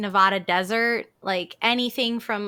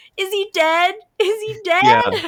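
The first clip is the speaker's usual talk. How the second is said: very high, stretched-out, drawn-out scream; 12 semitones higher, 6 dB louder than usual. Describing a scene where Argyle speeds in, imitating Argyle screaming. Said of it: "it's just Argyle screaming, like".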